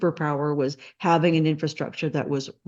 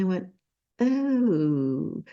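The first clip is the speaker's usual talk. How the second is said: ordinary talk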